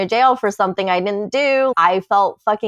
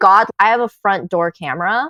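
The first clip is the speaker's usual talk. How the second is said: plain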